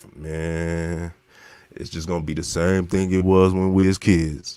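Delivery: low-pitched, stretched-out man's voice. Retelling what the letter-writer said back, imitating his deep voice. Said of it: "he got a deep ass voice".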